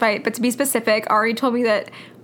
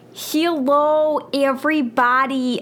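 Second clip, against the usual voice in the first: overdone Australian accent with drawn-out "hello"; 3 semitones higher than usual. Greeting everybody while trying out an attempted Australian accent. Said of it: "i've been trying to do an australian accent".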